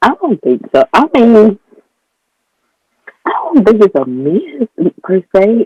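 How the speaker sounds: voice cracking. Answering a question about closure with a voice cracking from pollen. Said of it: "my voice is gonna be cracking".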